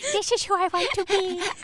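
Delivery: put-on cottagecore girl voice. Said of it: "Please do that again".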